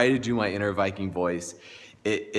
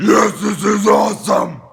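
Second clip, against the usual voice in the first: high, loud, raspy scream; 12 semitones higher, 11 dB louder than usual. Retelling inner tubing with family, re-enacting a Viking-voice scream. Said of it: "screaming in my Viking voice".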